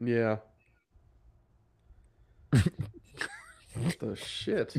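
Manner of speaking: beaten, let-down, deflated tone. Talking through movie rankings, the speaker sounds defeated. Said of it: "You sound defeated".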